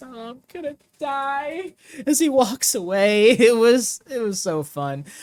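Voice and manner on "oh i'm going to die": high, frightened wimpy whine, drawn-out "die". Retelling Mikey Whipwreck walking away from the camera: mock-scared Mikey Whipwreck voice. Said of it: "perfect like w- scared wimp voice".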